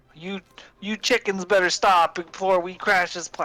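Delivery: thick put-on Alabama or Georgia accent, high and loud. Imitating how she talks: imitating thick Alabama or Georgia accent. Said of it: "Her accent is Alabama or Georgia".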